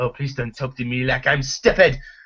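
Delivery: full-on whiny, complaining voice. Complaining about an annoying villain, quoting him in a mock whiny voice. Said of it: "his his whiny voice".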